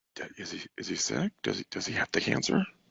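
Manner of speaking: hushed, quiet whisper. Retelling what people asked about a shaved head: imitating people whispering. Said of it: "everyone started whispering".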